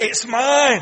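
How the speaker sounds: very loud, high, booming shout. Voicing evil with a clenched fist: shouting. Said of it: "Evil has a clenched fist and shouts".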